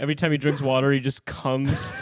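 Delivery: plain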